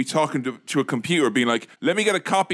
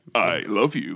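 put-on dramatic dubbed voice, much lower; 7 semitones lower than usual. Mocking a poorly dubbed show, the speaker imitates a character in a mock-dramatic dubbed voice. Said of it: "in a very dramatic voice".

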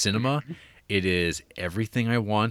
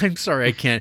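bashful, said through giggles; 4 semitones higher, 5 dB louder than usual. Retelling an actress breaking up during a romantic scene: imitating Sean Young giggling while apologizing. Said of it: "she just starts giggling, going".

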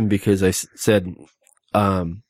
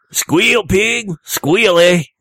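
heavy exaggerated Mexican accent, higher and louder; 10 semitones higher, 5 dB louder than usual.

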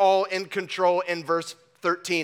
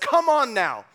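fiery, sarcastic tone; 4 semitones higher than usual. Quoting an apostle rebuking people who presume on their plans: imitating a fiery sarcastic rebuke. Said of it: "with a bit of fire and, might I suggest, sarcasm".

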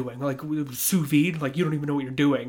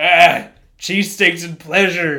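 put-on drunk belligerent voice, louder; 3 semitones higher, 11 dB louder than usual. Imitating an imagined dad, a drunk belligerent dude: imitating a drunk belligerent dude. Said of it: "drunk, belligerent dude who's like".

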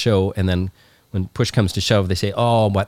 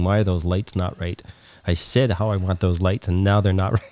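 usual speaking voice

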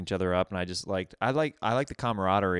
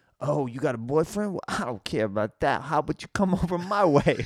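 high, fake put-on Italian accent; 8 semitones higher than usual. Telling how he started a friendship with a woman, put-on Italian accent. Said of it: "I like the Italian".

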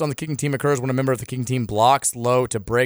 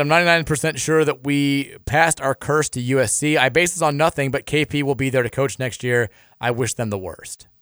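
ordinary talk, nothing marked

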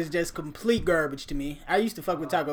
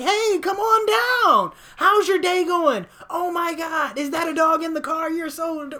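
overly sweet, high, gushing friendly tone; 12 semitones higher, 3 dB louder than usual. Retelling how a drive-thru worker greets customers: imitating an overly friendly drive-thru worker. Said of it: "this bitch is hanging out the window waving at you like".

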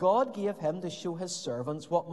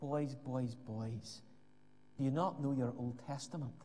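put-on gentle, very quiet, low Scottish accent; 5 semitones lower, 9 dB quieter than usual. Retelling how a college lecturer rebuked the students, in his soft Scottish accent. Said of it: "in his soft Scottish accent said".

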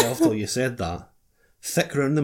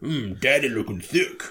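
mock-macho voice, much slower pace. Guessing how a man would say a phrase, imitating him in a mock-macho way. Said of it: "doing it a really macho way".

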